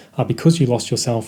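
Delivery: ordinary talk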